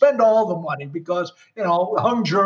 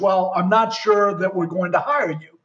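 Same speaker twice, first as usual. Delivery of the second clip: ordinary talk, nothing marked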